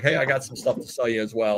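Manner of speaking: ordinary talk, nothing marked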